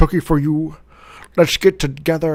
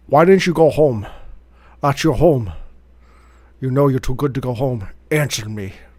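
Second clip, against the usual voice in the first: put-on Scottish accent; 3 semitones lower than usual. Reading a movie line for others to guess, Sean Connery impression. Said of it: "I'm going to read them as Sean Connery".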